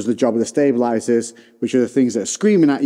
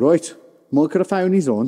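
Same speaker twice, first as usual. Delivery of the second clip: put-on West Midlands accent; 4 semitones higher than usual.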